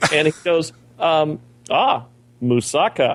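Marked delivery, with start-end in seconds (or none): 1.7-3.2 imitated broken English speech. Retelling a waiter's answer at a buffet: imitating broken english. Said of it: "spoke very broken English".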